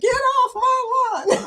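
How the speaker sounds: very high-pitched, slow, drawn-out holler. Retelling how another speaker sounded: imitating man on porch yelling. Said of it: "he sounded like one of the men out on the porch going".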